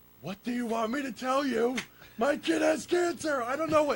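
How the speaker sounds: mock very high, drawn-out, frustrated screaming. Recalling being frustrated by everyone calling, retell your own screaming. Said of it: "and I'm screaming".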